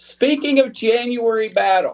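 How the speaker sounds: shouting, high and drawn out.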